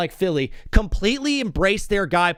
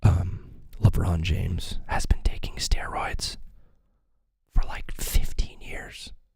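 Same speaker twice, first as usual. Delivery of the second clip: hushed voice, lower and quieter; 4 dB quieter than usual. Sharing a claim with viewers, telling them to turn up volume: whispering. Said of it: "I'm gonna have to whisper for this one".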